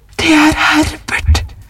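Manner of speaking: sudden, high, piercing shrieking cry. Reading a story, the wife hears knocking echo through the house: shrieked. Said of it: "skrek hun".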